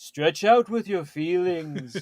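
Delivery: put-on loud voice with a Liverpool accent. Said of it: "I made him sound like a beetle".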